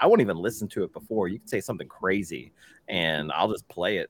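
normal talking voice

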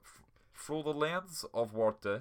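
very slow, drawn-out, bad Russian accent. Trying to copy the film director's accent: bad Victor Kossakovsky Russian accent. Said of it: "does this sound anything like it?".

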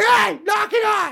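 mock shrill, rough, high rasping scolding yell. Retelling leaning over the porch rail to yell at the cats: imitating yelling at cats. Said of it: "lean over and yell at the cats".

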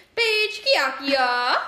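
put-on Italian accent.

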